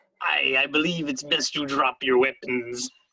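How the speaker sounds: gruff put-on character voice. Repeating the Captain Brackus impression during the game, gruff Captain Brackus voice. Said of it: "the gruff was there".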